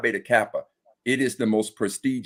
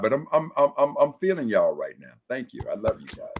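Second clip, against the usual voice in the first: choked up, fighting tears, stumbling over words; 3 semitones higher than usual. Thanking friends he misses while trying not to cry: holding back tears. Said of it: "I'm trying not to get in my feelings and cry".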